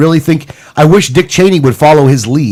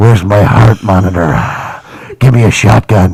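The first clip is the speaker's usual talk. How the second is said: evil put-on villain voice, lower pitch; 7 semitones lower than usual. Mocking what Cheney sounds like: Dick Cheney as evil witch and Darth Vader. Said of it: "what Cheney sounds like is".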